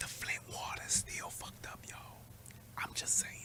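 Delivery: very quiet, breathy, hushed whisper. Sharing an aside with listeners who might not know it, whispered. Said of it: "I'm gonna whisper this".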